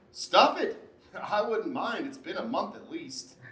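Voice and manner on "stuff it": loud mocking delivery. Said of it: "that's your new favorite phrase".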